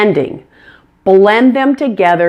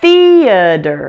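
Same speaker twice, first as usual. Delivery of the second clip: first syllable the- in theater loud and long. English pronunciation lesson, saying theater with stress on first syllable the. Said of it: "Make sure that the first syllable is stressed. Say it louder and longer than the others".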